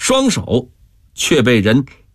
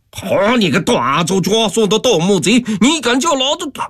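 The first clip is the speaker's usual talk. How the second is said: enraged, furious, very high and rising pitch; 9 semitones higher than usual. Reading a man retorting after a gambler calls him baldy; furious. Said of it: "气黄了脸".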